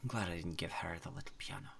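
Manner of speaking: very soft, very quiet muttering under the breath. Acting out someone's reaction in a story, retelling a mutter under breath. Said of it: "just mutter under her breath".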